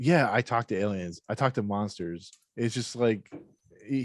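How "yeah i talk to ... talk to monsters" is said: usual speaking voice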